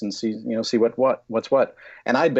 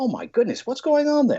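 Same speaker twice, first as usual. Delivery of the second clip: light put-on British accent, high and swooping. Showing how to tell a story to one person, voicing a british guy: imitating a british guy. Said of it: "this British guy said".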